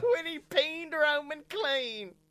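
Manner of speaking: put-on high, slow little cartoon kid voice. Podcaster echoing what a co-host said, Little Gideon voice. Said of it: "that was my little Gideon coming out".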